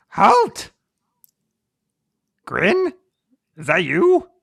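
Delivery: loud, calling goblin voice. Game master voicing Puxey calling out to Grin the goblin: Puxey goblin voice. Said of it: "Puxey the goblin calls out to".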